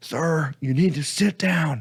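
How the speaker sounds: acted-out, high, drawn-out yell. Retelling how a lady yelled at a young man walking back, retelling a lady yelling. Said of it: "this lady just yell at him like".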